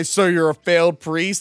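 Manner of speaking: put-on haughty, snooty British accent. Retelling a snobby British guy's question to a contestant: snobby British accent. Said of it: "snobby British guy".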